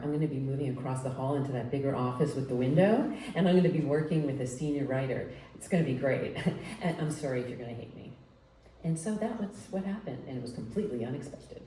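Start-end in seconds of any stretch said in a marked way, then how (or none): none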